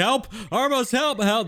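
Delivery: high, frantic, screaming cry.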